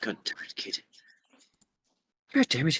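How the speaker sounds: whispered, grumbling mutter under the breath. Playing a character in the sheriff's office after a threat, muttered under the breath. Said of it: "say under my breath".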